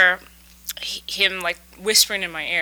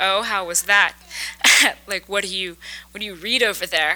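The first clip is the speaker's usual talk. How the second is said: acted-out mocking voice. Speaker retells asking a man about his return, retelling own mocking question. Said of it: "I sort of mockingly asked him".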